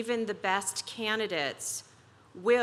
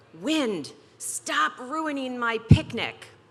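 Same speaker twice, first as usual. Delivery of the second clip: put-on tiny, small little-girl voice yelling; 3 semitones higher, 4 dB louder than usual. Parent retelling what their three-year-old daughter yelled outside, imitating a tiny voice yelling. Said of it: "in her little tiny voice and yelled".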